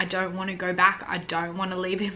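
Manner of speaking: normal talking voice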